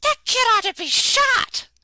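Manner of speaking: shrill, very high, furious, angry shout. Passing on a secondhand story about a woman's reaction: retelling a shout. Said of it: "she shouted something along the lines of".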